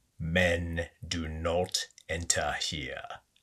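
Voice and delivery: low, hushed, growled witch voice. Reading a story aloud, voicing the witch's warning to the man: growling. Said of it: "she growled".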